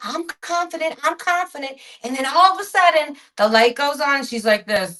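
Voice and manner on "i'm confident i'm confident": pitched-up, cocky, self-assured, insistent, said twice. Retelling a TV episode, imitating the girl who knows everything: Cindy Brady. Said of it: "she's all still like".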